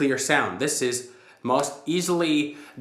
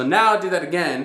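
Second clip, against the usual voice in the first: ordinary talk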